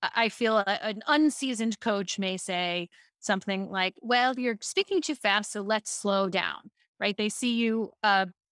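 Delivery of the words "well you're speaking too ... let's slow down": ordinary delivery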